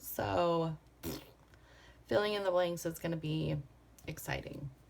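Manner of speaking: dry, sarcastic, tongue-in-cheek tone. Describing a very busy week ahead, said in a sarcastic tone. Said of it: "Did you sense the sarcasm there?".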